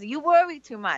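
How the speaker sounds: put-on New York Brooklyn accent. Quoting a woman from Brooklyn who talks to the speaker, in a Brooklyn accent. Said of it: "she comes to me with this accent".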